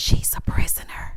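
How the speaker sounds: put-on, mock whisper. Acting out what a man whispered about a woman, imitating a whisper. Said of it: "He gonna whisper".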